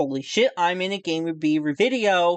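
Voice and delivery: plain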